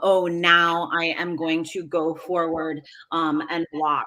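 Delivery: normal talking voice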